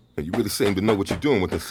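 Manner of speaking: ordinary delivery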